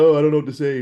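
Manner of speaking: put-on wrestler voice. Mocking a wrestler who pretends to hate promos: mocking imitation of a wrestler. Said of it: "Acting like".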